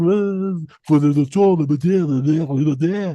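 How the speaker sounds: fake French accent, very slow and drawn out. Imitating a french president's mistress situation in a put-on french accent. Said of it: "that's supposed to be a French accent".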